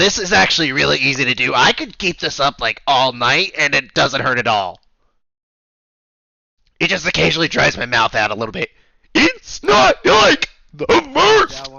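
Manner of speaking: put-on five-pack-a-day smoker voice. Chatting with others while keeping up a character voice, five-pack-a-day smoker voice. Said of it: "five pack a day smoker sounded pretty good".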